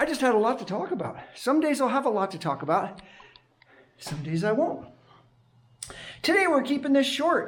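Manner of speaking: breathless chatter. Wrapping up a short recording after a run, out of breath. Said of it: "There I am out of breath".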